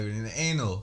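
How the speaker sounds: ordinary talk, nothing marked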